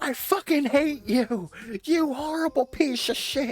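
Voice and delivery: put-on screaming. Imagining a mental break at a plushie: imitating own screaming. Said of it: "me just screaming at a Ralph plushie".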